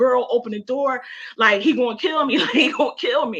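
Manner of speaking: mock high, frantic, terrified, panicked screaming. Retelling running to a best friend's door: imitating her own screaming. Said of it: "I'm screaming like".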